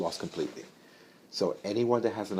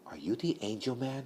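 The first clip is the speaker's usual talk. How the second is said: put-on very quiet, hushed, slow little-boy voice; 4 semitones higher, 7 dB quieter than usual. Retelling a phone call with a nine-year-old boy: imitating a quiet little boy. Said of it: "He got very quiet".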